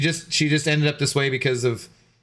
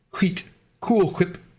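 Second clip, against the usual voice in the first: put-on cartoon voice, breathy h, higher; 4 semitones higher than usual. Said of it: "Stewie Griffin saying "wheat thins."".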